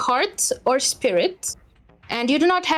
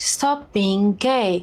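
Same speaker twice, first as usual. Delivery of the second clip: grand, proclaiming voice, as if from the sky; 4 semitones lower than usual. Voicing the sky answering the player: booming sky voice. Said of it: "in its booming voice says".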